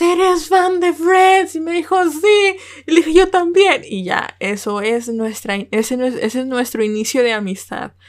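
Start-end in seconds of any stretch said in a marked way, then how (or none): 0.0-1.5 high-pitched call, shouted as if across a distance. Retelling spotting someone in a Friends shirt while waiting for class: retelling a shout from afar. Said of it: "Le grité así de a lo lejos".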